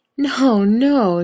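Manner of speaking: light, high, chuckling voice. Reading fiction, a fury waving off another character: chuckling. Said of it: "she chuckled".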